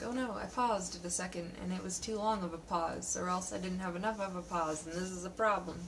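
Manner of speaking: ordinary delivery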